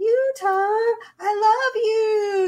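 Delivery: put-on sweet, cutesy little-girl voice, very high and slow. Imitating a huge monster who talks like a young girl: cutesy little-girl voice. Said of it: "in this really, like, kinda cutesy voice".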